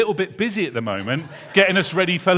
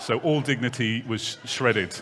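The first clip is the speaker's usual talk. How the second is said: ordinary delivery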